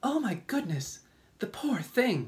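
high, loud, cried-out exclamation. The ladybug reacts after the others say he looks ill; cried out. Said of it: "the ladybug cried".

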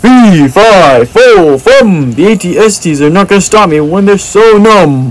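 playful, high, storybook giant monster voice. Playing a Star Wars battle against AT-STs, speak as the Jack and the Beanstalk giant. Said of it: "I sound like a giant from Jack and the Beanstalk".

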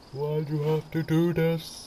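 speaking through a yawn. Venting about someone who hasn't shown up, yawning while talking. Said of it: "I'm yawning while I said that".

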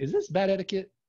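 put-on sweet Southern accent. Speaker quoting the person from Alabama who asked the question, sweet Southern accent. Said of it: "with the sweetest Southern accent".

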